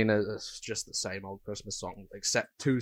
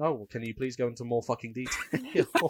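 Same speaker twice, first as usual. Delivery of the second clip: animated, swooping, rude customer-service agent voice; 3 semitones higher than usual. Acting out a customer service call: playing a rude customer service agent. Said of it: "as a customer service agent, are you supposed to swear this much?".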